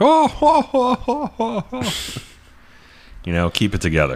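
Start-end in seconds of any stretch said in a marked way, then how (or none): 0.0-1.9 very high, very slow, booming, drawn-out ho-ho laugh. Showing how a guest stops the whole room laughing: imitating a booming laugh. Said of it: "don't stop the whole room by being like".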